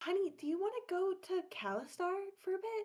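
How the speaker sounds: half-whisper, voice dropping away. Voicing a character asking Phaedra while the baby falls asleep: half-whispering. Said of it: "in a whispered tone".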